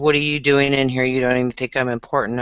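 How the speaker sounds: usual speaking voice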